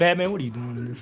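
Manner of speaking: normal talking voice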